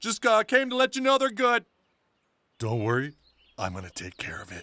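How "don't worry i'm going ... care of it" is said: very low, hushed mutter under the breath. After assuring Randy that the boys are fine, the speaker adds this under the breath. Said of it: "[under breath]".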